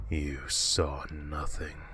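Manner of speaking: dark, deep-throated, hushed creature voice. Narrating the creature standing over the narrator and speaking: deep, dark creature voice. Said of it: "in a deep, dark voice".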